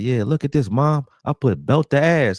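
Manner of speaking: acted, high, gloating, boastful, taunting voice. Retelling a nephew gloating during a Madden game: imitating trash talk. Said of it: "was just talking so much shit".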